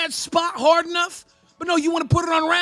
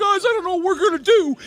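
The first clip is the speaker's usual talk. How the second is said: mock begging, helpless, sympathy-seeking lament; 2 semitones higher, 4 dB louder than usual. Mocking a co-host's plea to fans in voice chat: mock-begging for sympathy. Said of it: "trying to beg for fucking sympathy bait".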